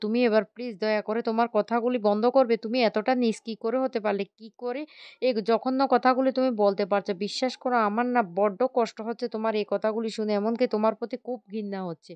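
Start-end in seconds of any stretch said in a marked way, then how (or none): none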